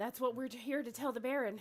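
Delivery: put-on out-of-breath voice. Voicing a character who runs up to the guards: acting exaggerated breathlessness. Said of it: "she's out of breath".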